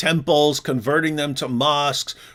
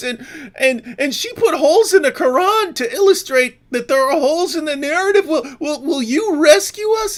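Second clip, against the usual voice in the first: mock panic, frantic pleading, stammering, tripping over words; 12 semitones higher, 3 dB louder than usual. Mocking others who lose their minds and run to the police: mocking panicked plea for help. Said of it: "they all lose their minds and they run".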